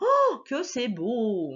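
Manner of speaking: swooping, overdone, theatrical exaggerated exclamation. A teacher showing a student how to read an exclamation: exaggerated exclamation. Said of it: "une maîtresse qui en fait beaucoup".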